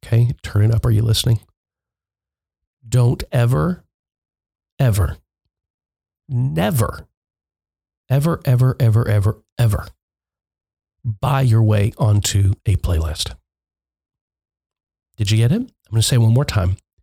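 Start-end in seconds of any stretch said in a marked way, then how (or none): 2.9-13.3 slow, deliberate, each word drawn out on purpose. Podcast host telling listeners to turn it up for a key point, slow and soft. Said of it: "I'm going to speak slowly and softly".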